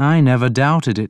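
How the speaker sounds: ordinary delivery, nothing marked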